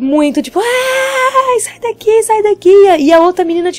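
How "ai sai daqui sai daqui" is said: mock screaming, much higher. Retelling how a woman started screaming at the speaker's friend, imitating someone screaming. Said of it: "ela começou a gritar horrores".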